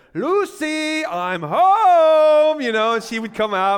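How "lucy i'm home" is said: loud, high call with the word home drawn out. Recalling a fifties sitcom greeting: Ricky Ricardo impression. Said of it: "you had Ricky Ricardo be like".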